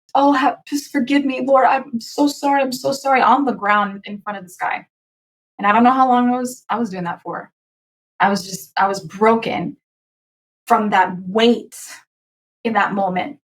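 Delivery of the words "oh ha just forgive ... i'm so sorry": put-on high, tearful weeping, pleading cry. Retelling falling to the ground before this guy: retelling crying while praying. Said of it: "and crying".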